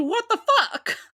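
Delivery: high, screamed outburst. Retelling a first reaction to a character appearing: imitating a scream. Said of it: "I screamed".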